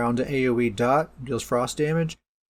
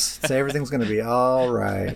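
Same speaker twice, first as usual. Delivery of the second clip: mock reassuring, sarcastic tone. Reacting to a buff to an unused ability: sarcastic. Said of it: "that's sarcasm, if you couldn't tell".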